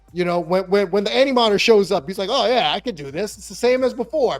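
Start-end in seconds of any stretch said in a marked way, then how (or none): 2.3-4.4 brash, cocky, smug, overconfident hero voice. Retelling a comic scene as the Animator shows up: overconfident Superman. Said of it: "he's overconfident".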